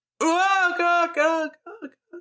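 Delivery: very high, dramatic death cry, played cool. Asked to share their version, a speaker performs a cool death cry. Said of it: "so you do like a cool death cry".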